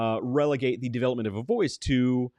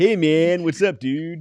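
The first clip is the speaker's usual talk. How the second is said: put-on slow, drawn-out, raised stoner dude drawl; 5 semitones higher, 7 dB louder than usual. Trying out a greeting among friends in a stoner voice. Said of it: "I can't even do a stoner voice".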